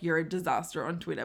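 ordinary delivery

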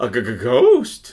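full cartoon dog voice with a stutter. Acting out a movie character's answer to a seance question: Scooby-Doo voice. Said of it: "She went full Scooby-Doo".

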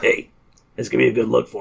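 put-on sleazy, gravelly voice. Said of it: "his voice that he does in this".

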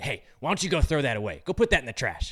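snide, curt, rude and bossy. Acting out someone at a restaurant speaking to you: imitating someone speaking rudely. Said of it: "says really rudely to you".

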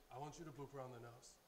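ordinary talk

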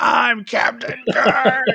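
mock, very high-pitched, shrill shrieking yell. Telling how a man smashing his room started yelling: retelling someone's yelling. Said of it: "And he starts yelling".

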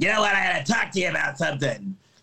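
gruff, mean voice. Retelling a scene in the car, the speaker quotes Trudy, imitating Trudy's mean, gruff voice. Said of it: "she'd say something like really mean like".

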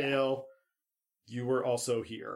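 plain

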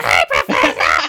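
low, loud, creaky barking voice.

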